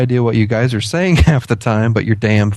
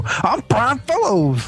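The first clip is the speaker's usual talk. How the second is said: very high-pitched character voice; 11 semitones higher, 4 dB quieter than usual. Suggesting a prank at the zoo: Brian Fellows impression. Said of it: "I can't think of the character now".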